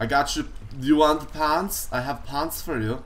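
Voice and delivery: put-on Norwegian accent. Joking around with friends during a game, talking like a guy from Norway. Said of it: "I don't know why I'm talking like some guy from like Norway".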